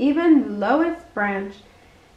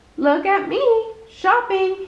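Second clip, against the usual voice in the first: high exclaiming cry, called out; 7 semitones higher than usual. Reading a story aloud, a character cries out to Kanga. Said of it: "he cried".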